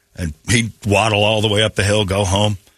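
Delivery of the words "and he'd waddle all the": ordinary delivery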